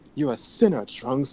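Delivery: put-on smooth voice with a slight British accent. Showing how a character was expected to sound saying a line: slight british accent. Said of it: "like a little British accent".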